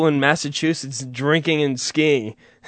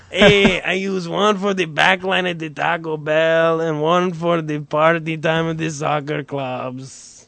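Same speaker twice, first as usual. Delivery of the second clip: exaggerated, laid-on put-on Eastern European accent. Mid-bit, a speaker switches into a Borat voice. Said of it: "What am I doing the Borat voice?".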